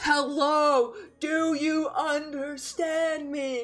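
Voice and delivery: speaking loudly and slowly. Addressing someone who may not understand the language, loud and slow. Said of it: "loudly and slowly".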